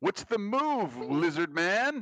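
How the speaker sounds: very high, shouted call in a character voice. Voicing a character who yells at a lizard man while running: yelling in character. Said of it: "I'm gonna yell".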